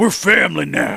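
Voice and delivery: real gruff, rough-edged grown man's voice. Recounting a funny game scene, quote Papa Nier in a gruff voice. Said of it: "he's like real gruff voice and he's a grown man".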